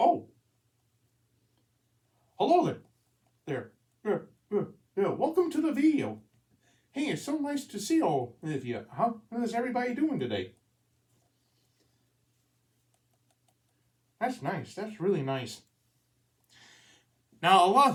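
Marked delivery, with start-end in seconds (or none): 0.0-15.6 put-on swooping, sing-song puppet voice. Demonstrating a puppet turning to greet the camera: puppet voice. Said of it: "looks at the camera, and then going like".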